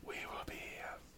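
faint, eerie, very hushed ghostly whisper. Narrating a voice heard from everywhere in the room as listeners step out: whispered voice. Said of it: "you hear a whispered voice saying".

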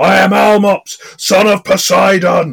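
furious giant roar, very high, loud and booming. Narrating a game scene, voicing an enraged giant: Almops, enraged giant bellowing. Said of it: "an enraged giant bellows multiple times".

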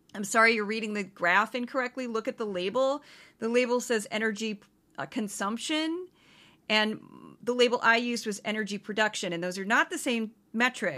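ordinary talk

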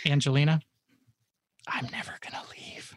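very creepy, eerie, breathy whisper. Answering a request to come back at the end, playful creepy whisper. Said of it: "You whispered that very creepily".

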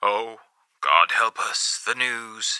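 gloomy tone. Reading a story aloud, the radio DJ announcing the news: grim voice. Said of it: "The D J carried on in a grim voice".

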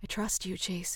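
plain

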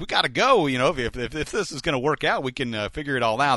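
high, eager, fired-up excitement, pushed out.

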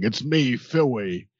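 put-on British accent. Trying out a line, saying it in a put-on british accent. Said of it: "I want to have that British accent where they do like the roticism thing".

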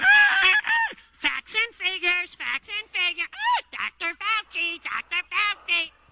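very slow, drawn-out, squawking cockatoo voice. In a comedy bit calling listeners cockatoos: squawking cockatoo impression. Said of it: "the cockatoo impression".

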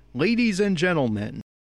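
sardonic, sarcastic show-host voice. Apologizing in a commentary, the speaker quotes how he introduced Atsushi: retelling a sarcastic introduction. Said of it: "I sarcastically introduced Atsushi as our protagonist with".

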